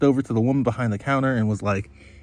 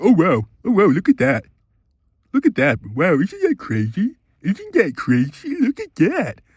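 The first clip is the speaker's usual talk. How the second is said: sarcastic, mocking chatter in swooping sing-song; 7 semitones higher than usual. Retelling a woman mocking a man's shopping chatter, retelling mocking mimicry. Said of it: "she would just start mocking him".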